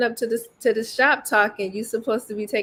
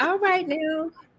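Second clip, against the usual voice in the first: sweet, cute Southern drawl, pitched up; 6 semitones higher than usual. Teasing a friend by imitating her, cute little Southern accent. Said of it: "In your cute little Southern accent".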